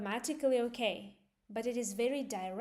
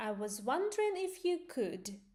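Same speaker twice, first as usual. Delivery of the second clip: pitch rises, then falls on could; 4 semitones higher than usual. English intonation lesson on a polite request: rising then falling on could. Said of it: "you go up and then at the end you go down".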